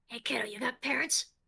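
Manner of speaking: hushed, theatrical stage whisper meant to carry. Leaning over to the kid, a character asks him a question in a stage whisper. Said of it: "stage whispers".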